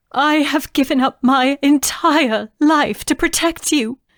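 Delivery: very high, trembling, quavering voice. Narrating a mother turning to speak to her daughter, quavering voice. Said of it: "balancing on her warrior's arm. / [name] stared back at her mother, / [name] demanded".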